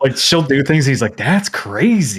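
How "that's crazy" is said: laid-back California bro voice. Imitating the main character's brother in a game: California dude accent. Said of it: ""Dude's from California" accent".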